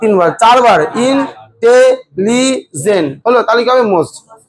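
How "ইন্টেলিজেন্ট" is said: intelligent stretched very slowly, syllable by syllable. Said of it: "কবার লাগছে?".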